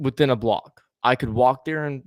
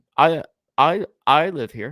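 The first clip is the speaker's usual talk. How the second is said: put-on stutter, higher; 3 semitones higher, 3 dB louder than usual. Retelling telling an officer where they live, imitating own stutter. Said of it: "I did stutter whenever I talked to him".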